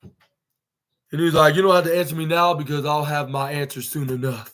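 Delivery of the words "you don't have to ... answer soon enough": deep, low voice, serious and grave. Retelling Samoa Joe's reply to MJF: serious deep Samoa Joe voice. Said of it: "In a serious, deep, deep voice".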